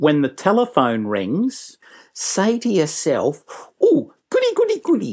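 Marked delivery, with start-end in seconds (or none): 3.8-5.1 very high pitched, happy and eager. A speaker advising on answering the phone shows what to tell yourself, happy to help. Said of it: "Sound happy to help".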